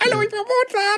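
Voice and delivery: squeaky, high cartoon voice. Imagining a composer introducing himself, Schlumpf voice. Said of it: "Wenn die so mit Schlumpfstimme gehabt hätten, irgendwie so".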